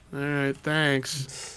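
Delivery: scornful, grudging, disdainful and dismissive. Voicing a beggar who accepts a ration pack: disdainful beggar voice. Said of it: "they kinda look at it with disdain and be like".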